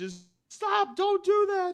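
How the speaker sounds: loud, high-pitched screaming. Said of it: "is just screaming".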